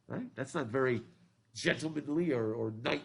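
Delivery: ordinary delivery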